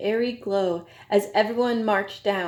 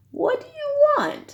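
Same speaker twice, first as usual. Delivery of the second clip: very high, croaky, suspicious voice; 4 dB louder than usual. Persimmon answers a knock at her door and croaks a question. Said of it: "she croaked".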